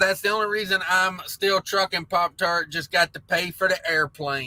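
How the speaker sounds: plain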